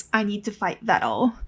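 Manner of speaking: put-on reluctant tone. Retelling a reply to the engineer's order, mock-reluctant. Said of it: "reluctantly replies".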